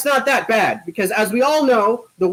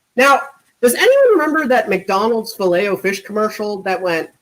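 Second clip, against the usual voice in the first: ordinary delivery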